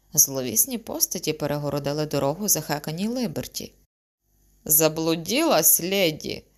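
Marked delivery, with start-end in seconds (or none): 4.7-6.4 sly, snide, sneering tone. A sinister figure blocking a girl's way asks her, snide. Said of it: "єхидно спитала одна з них".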